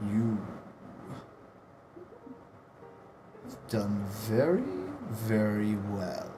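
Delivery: swooping, huge giant spider monster voice. Voicing a colossal spider that looks down at the player: voicing a giant spider. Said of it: "he just looks down at you and he says".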